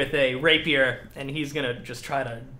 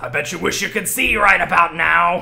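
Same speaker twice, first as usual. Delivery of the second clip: louder taunting voice. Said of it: "And he says".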